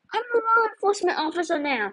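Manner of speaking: high, brave-sounding, shouted voice mustering courage. Narrator reads Crane answering the voice claiming to be the headless horseman, shouting. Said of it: "Crane shouted".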